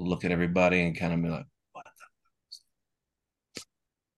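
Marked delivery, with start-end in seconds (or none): 1.7-3.6 hushed whispering, much quieter. Player voicing a character reacting to something passing on the path, whispering. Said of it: "I'm whispering".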